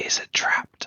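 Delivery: unvoiced whisper. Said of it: "Shiro's just gonna whisper to, uh, Zhang".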